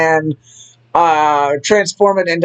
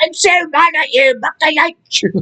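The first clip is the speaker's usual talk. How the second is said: very high, squeaky, badly done put-on Irish accent; 11 semitones higher than usual. Speaker acts out Lyra walking out to apologize, using: bad Irish accent. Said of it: "That's the worst Irish accent I've ever done".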